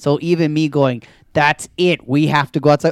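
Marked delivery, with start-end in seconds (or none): 1.3-2.9 put-on raised voice, louder, higher pitch. Recalling own words to Olivia, retelling a raised voice. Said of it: "any raised voice is yelling".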